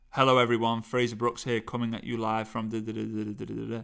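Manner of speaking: low, flat, lifeless droning monotone. Showing the wrong way to speak when standing up: monotone voice. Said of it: "do not speak with a monotone voice".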